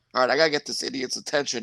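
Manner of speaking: ordinary talk, nothing marked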